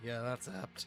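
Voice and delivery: muttered quietly under the breath. Voicing a character's quiet aside to the group: muttered under the breath. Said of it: "Q under his breath go".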